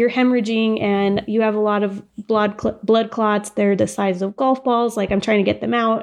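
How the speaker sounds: ordinary talk, nothing marked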